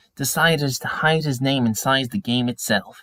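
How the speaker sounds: ordinary delivery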